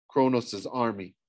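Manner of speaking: usual speaking voice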